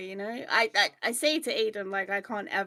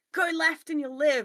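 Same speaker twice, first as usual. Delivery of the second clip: high, barked shout, walkie-talkie radio style; 8 semitones higher, 5 dB louder than usual. Imagining someone guiding them over a walkie-talkie: imitating someone shouting over a walkie-talkie. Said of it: "shouts down a microphone at me".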